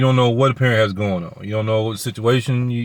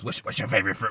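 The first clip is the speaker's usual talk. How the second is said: put-on creepy voice, hushed whisper; 9 dB quieter than usual. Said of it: "you know that creepy voice".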